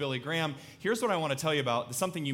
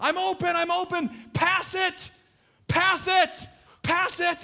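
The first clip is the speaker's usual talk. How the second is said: very slow, stretched-out, high, drawn-out yell; 6 dB louder than usual. Retelling a childhood football game, calling for the ball: retelling a yell. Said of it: "just yelling".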